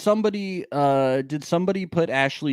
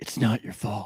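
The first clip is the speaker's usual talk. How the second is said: breathy, hushed, soft voice; 6 semitones lower, 4 dB quieter than usual. Quoting a famous movie line to comfort someone: Good Will Hunting impression. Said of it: "That's my impression of that movie".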